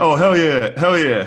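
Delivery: hyped, excited hollering. Retelling what fans at the stand-up shows kept doing: imitating fans yelling. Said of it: "people are yelling".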